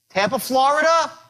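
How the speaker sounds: "Florida" tipped up with rising pitch. Demonstrating a sales call greeting: rising pitch on florida. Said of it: "by raising up my voice at the end".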